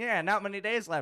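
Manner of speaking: goofy radio-announcer voice, high and loud. Retelling how they started doing a wacky radio voice. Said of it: "I started doing just this like wacky radio voice".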